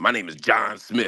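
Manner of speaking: put-on, expectant, self-important, celebrity-like voice. Retelling how a stranger introduced himself: imitating a man expecting to be recognized. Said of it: "he said it like I was supposed to know who he was".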